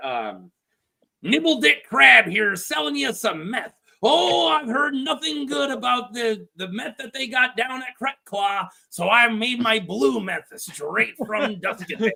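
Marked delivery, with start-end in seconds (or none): 1.2-12.1 high-pitched hawking salesman character voice. Player getting into character to sell meth to the others: Nibble Dick Crab voice. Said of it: "let me get the character here".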